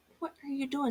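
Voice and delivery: mock, very high, angry exclamation. Retelling an angry reaction to a hunting partner walking up: imitating own angry remark. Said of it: "And I was so mad".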